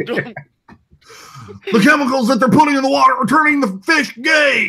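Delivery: very high caricature voice. Answering a request for an impression: Alex Jones impression. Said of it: "Do you have an Alex Jones impression".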